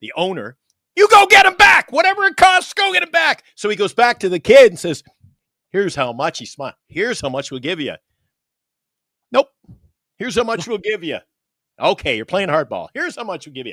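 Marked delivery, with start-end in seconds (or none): 0.9-3.4 mock, very high, loud screaming. Speaker retelling a team owner yelling at his scouting staff, imitating someone screaming. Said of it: "he's screaming at his scouting staff".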